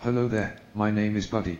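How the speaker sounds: british-accented computer voice, synthetic sounding. Demonstrating the second version of the assistant's voice: British accent text-to-speech. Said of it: "and he had a British accent".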